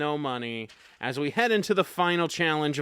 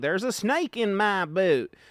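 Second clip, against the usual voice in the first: put-on talking doll voice, higher; 4 dB quieter than usual. Explain the pull-string dolls by doing what one says when pulled, in a Woody voice. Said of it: "like Woody".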